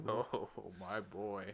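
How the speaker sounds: voice taken down low. Quoting a scene from the first X-Men movie in Magneto voice. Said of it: "I love your Magneto".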